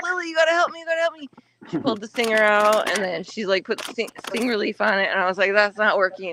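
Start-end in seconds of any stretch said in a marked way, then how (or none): 0.0-1.3 frantic, high, rushed screaming. Retelling a sting, the speaker acts out screaming at her daughter. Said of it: "I was like screaming at, at my daughter".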